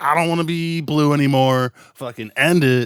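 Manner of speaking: loud, fed-up. Mocking an actress who wanted out of her films: imitating Jennifer Lawrence. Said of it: "Jennifer Lawrence is just like".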